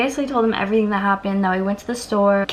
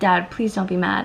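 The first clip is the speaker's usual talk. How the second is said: put-on sobbing, mock-tearful voice. Recounting calling Dad after a car break-in, acting out past sobbing. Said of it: "I'm sobbing while I'm telling him this".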